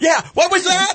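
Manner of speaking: very high, squeaky, confused voice.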